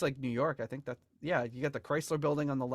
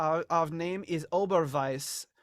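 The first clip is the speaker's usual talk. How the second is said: slow, laid-on, fake German accent; 4 semitones higher, 4 dB louder than usual. Joking about being a german electronic duo, put-on german accent. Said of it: "It's my German accent for you".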